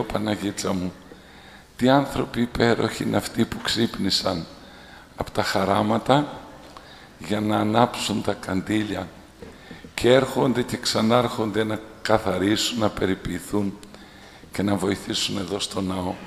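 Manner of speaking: ordinary talk, nothing marked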